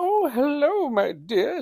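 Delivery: put-on very high, very slow elderly woman voice. Act out the lady down the hall greeting you, in a Mrs. Doubtfire voice. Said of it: "She talks like Mrs. Doubtfire".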